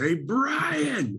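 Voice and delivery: shrill, very high yell, long drawn-out last word. Retelling how Kim yelled at the bartender from a booth: imitating Kim yelling. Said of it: "he yells at the bartender".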